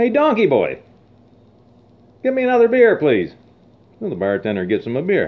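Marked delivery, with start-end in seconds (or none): 0.0-3.3 very high-pitched, shrill, swooping shouted yell. Telling a bar joke, a customer calls the bartender: imitating a customer yelling. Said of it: "he yells to the bartender".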